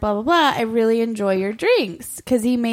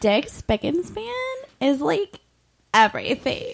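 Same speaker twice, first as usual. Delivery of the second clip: put-on tipsy, gushing party-girl voice; 4 semitones higher, 3 dB quieter than usual. Asked to say a line in a put-on drunk girl voice. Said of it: "my my drunk girl voice?".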